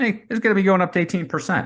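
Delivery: very high, shrill, rushed, overwrought alarmist panic. Speaker mocks how the media and Twitter sound, imitating an overly emotional alarmist. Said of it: "That's what they sound like. So emotional".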